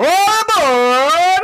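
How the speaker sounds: ridiculous, very high, drawn-out goofy holler. Describing a foreman in a factory, the speaker acts him out, imitating a foreman yelling out. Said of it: "yelling out like".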